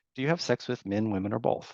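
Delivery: neutral, low-energy, flat and even, non-judgmental tone. Showing how to ask everybody a question: flat, even, non-judgmental. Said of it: "in a very non-judgmental, very even manner".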